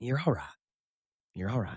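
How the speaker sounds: soft, quick, comforting, reassuring Southern woman's voice. Speaker asks listeners about a Southern woman looking at them, imitating a Southern woman. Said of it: "a Southern woman just like look at you and say".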